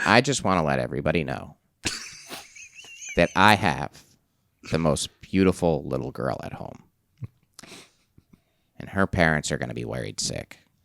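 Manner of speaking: low voice with a touch of nasal twang. On a podcast, doing an impression of Ken for everybody, slightly nasal. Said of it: "He put a little nasally on it".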